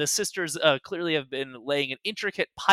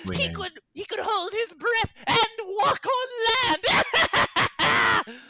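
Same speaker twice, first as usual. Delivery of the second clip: cackling character voice, much higher. Narrating the scene, voicing Sherry's line in Sherry's cackling voice. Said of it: "Laugh out with a great cackle, saying".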